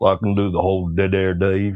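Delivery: put-on Kentucky-type Southern US accent. Answering a request to do an American accent: put-on Southern American accent. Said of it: "Most people go for that Southern Kentucky type accent".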